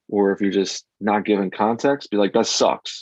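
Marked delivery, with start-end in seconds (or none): 2.3-3.0 mock curt rude delivery, higher. Acting out harsh feedback given without care: acting out rude feedback. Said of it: "If you say it like a dick".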